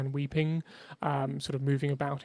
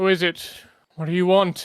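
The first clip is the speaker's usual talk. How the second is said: very loud voice of a big, burly man; 4 semitones higher, 10 dB louder than usual. Voicing a large man who has just stopped weeping, challenging visitors: voicing a large brawny man. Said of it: "quite a large man ... and he says".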